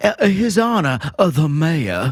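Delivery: put-on Southern accent. Reading out supporter names as a joke: southern accent. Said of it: "I ran out of Southern accent".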